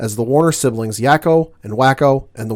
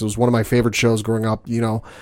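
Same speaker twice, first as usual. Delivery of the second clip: ordinary talk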